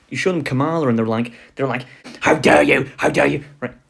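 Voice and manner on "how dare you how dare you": put-on rough, fanatical, outraged cry. Imitating Republicans shown a picture of Kamala: imitating fanatical outrage. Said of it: "fanatical hatred and devotion".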